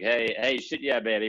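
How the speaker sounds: put-on South African accent. Imitating the South African founder's catchphrase: Johnny's South African accent. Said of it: "with his accent".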